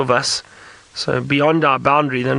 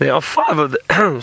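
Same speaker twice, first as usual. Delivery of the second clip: brief slip in the voice. Answering a viewer's question while watching a leopard feed, voice suddenly going high. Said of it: "My voice went really high there".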